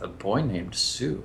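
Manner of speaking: slow, grumbled mutter under the breath to himself. Running the game, voicing the character as the party moves off: muttered under breath. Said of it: "he mutters under his breath".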